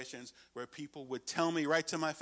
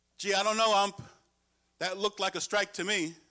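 loud, high, taunting yell carrying far; 7 semitones higher, 5 dB louder than usual. Umpire retells a third base coach's complaint about a call, imitating a loud yell. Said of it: "really loud for everyone to hear".

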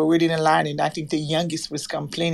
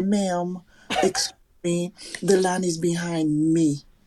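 calm, polite, unthreatening voice. Retelling how she speaks to an old lady, retelling a calm soft request. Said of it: "the soft voice".

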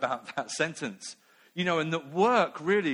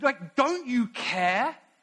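high, flustered, worked-up, all in a flap; 7 semitones higher than usual. Retelling Martha running to Jesus about her sister, as mock-flustered Martha. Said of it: "she's all in a flat".

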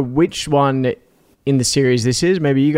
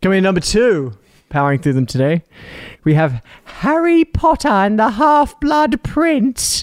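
put-on British accent, announcer voice, raised pitch; 7 semitones higher than usual. Announcing number two in a film countdown: put-on British accent. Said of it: "Is that your British accent?".

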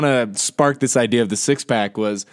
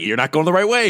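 argumentative, combative, sure-of-itself tone; 3 semitones higher than usual. Imitating a GPS arguing about the route: Stephen A. Smith arguing. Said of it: "He's just arguing with you".

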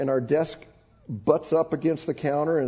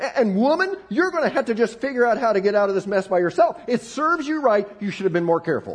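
acted, high-pitched, blaming scolding yell; 7 semitones higher, 3 dB louder than usual. Retelling pointing a finger at their wife and yelling, retelling a scolding yell. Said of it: "I yelled".

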